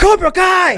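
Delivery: big, loud, very high-pitched shrill yell. Imitating a speaker who keeps asking the audience about Cobra Kai: imitating someone yelling. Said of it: "he yells at us".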